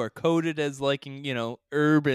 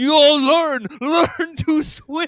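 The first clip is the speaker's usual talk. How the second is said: mock shouting, much louder; 12 semitones higher, 7 dB louder than usual. Describing a parody film scene, the speaker quotes a man's line, retelling a character's yell. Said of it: "he yells at her".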